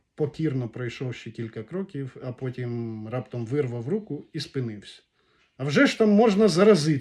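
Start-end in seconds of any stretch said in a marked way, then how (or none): 5.6-7.0 very loud, high, frightened voice. Pulling his hand free and stopping, he asks, frightened. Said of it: "перелякано спитав він".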